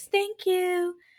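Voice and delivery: put-on very high-pitched voice of a tiny toddler. Imitating a woman who has just been given a plate of food, in [name]'s toddler voice. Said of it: "she's all in her toddler voice".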